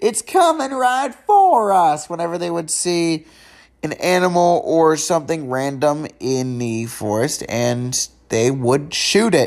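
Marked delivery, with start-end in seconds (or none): 0.0-2.1 slow shouting, high. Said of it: "Jimbo and Ned shouting".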